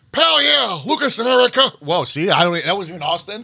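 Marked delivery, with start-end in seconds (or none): 0.2-1.7 put-on southern superhero voice, much higher, slower. Asked for a birthday shout-out to two co-workers, the speaker answers in a southern superhero voice. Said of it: "That was just a superhero voice".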